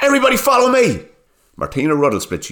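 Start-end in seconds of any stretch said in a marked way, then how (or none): 0.0-1.0 shrill, sky-high, loud yell. Reading a story aloud, Bart shouts to the group: shouting. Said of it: "Bart used the time to shout".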